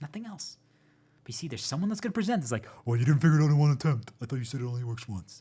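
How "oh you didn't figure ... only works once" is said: very loud, belittling, mocking jeering voice. Acting out someone who belittles a failed first attempt: changed voice mocking a critic. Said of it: "I changed my voice".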